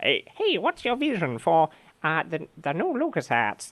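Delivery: clumsy, unconvincing, high, swooping put-on voice. Retelling an anecdote about a meeting, quoting someone while imitating someone's voice. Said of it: "that's not a very good impression".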